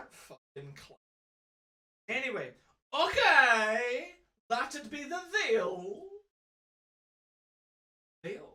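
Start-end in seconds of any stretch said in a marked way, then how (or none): 2.9-6.0 put-on high, slow, drawling old Scottish man voice. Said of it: "a Scotsman who s-, who talks like that".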